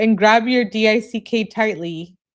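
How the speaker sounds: ordinary delivery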